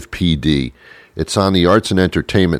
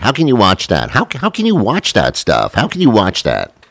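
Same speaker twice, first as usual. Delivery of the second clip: mocking, swooping, sing-song voice; 4 semitones higher than usual. Quoting a woman's complaint about what he watches, the speaker repeats it in a mocking voice. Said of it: "with a mocking kind of voice".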